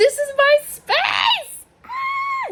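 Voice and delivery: very high, slow, drawn-out, climbing excited shriek. Showing off a new room, screaming with excitement. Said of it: "how many times I've screamed in this room".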